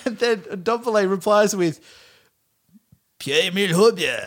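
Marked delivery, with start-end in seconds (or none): 3.2-4.3 weird put-on cartoon kid voice. Act out Ndombele replying with his teammate's name, in a weird Cartman-esque voice. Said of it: "puts on this like weird like Cartman-esque voice".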